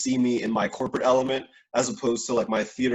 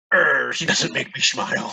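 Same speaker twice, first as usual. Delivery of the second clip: put-on swashbuckling pirate voice. Talking to Annabelle about their years of friendship, quoting themselves in a pirate voice. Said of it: "I don't know why I said it like that".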